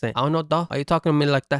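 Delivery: put-on South Central accent.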